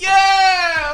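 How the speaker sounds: hyped, high, loud cheering and yelling.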